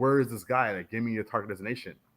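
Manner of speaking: loud, yelled voice. Retelling how the chiefs yelled at them in combat: imitating someone yelling. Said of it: "yelling at me".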